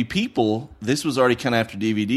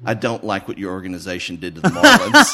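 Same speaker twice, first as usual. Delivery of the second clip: imitated deadpan, bone-dry, dead serious delivery with raised voice; 3 semitones lower, 5 dB louder than usual. Speaker quotes a customer sliding movies over the counter: imitating a deadpan delivery. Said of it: "with the straightest face".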